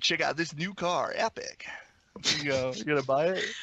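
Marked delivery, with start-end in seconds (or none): 0.0-1.7 put-on 1990s kids' commercial announcer voice. Asked to sell something, in a 90s kid commercial announcer voice. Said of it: "do your best 90s kid commercial announcer voice".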